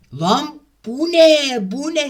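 loud, drawn-out, fed-up, exasperated furious outburst. Player keeps dying quickly in a game, furious, exasperated. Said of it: "Sinirden öleceğim şimdi ben".

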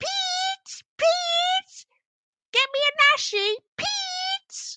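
very high-pitched, far too loud shouting. Imagining getting the wrong meal, the speaker calls out for pete, mock shouting. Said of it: "That might have been too loud".

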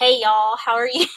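friendly, easy American Southern accent. Showing a Southern accent after being asked for one: Southern accent. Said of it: "And Southern".

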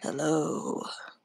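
fake deep manly voice. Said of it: "Manly voice?".

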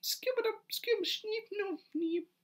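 really squeaky, very high princess voice. Showing how Phoebe Cates sounds when she's Caraboo, in a really squeaky Caraboo voice. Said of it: "her Caraboo voice is really squeaky".

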